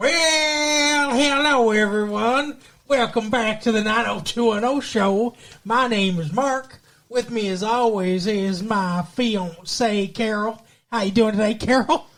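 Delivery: put-on Yankee accent voice. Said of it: "Stop putting on that Yankee voice".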